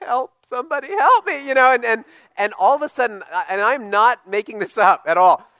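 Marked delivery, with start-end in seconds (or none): 0.0-1.5 high, tearful, crying, pleading tone. Speaker retells being alone in the woods with a bleeding knee, retelling crying for help. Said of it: "and I'm crying, I'm like".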